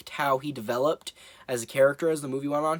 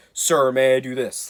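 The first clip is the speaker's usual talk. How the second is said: put-on dull, expressionless soldier voice, louder; 2 semitones lower, 6 dB louder than usual. Describing a film character, imitating Reggie's dull expressionless delivery.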